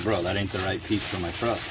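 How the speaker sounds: ordinary delivery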